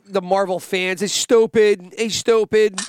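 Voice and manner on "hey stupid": mock yelling in a put-on voice. Describing a man who yells at Marvel fans, imitating someone yelling. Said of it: "he just fucking yells at the".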